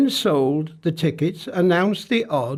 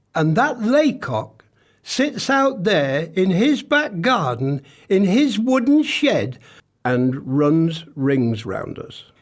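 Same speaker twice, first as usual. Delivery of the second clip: normal talking voice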